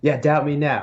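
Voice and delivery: mock screaming. Retelling a fighter leaving the octagon after winning: imitating someone screaming. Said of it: "screaming at the top of his lungs like".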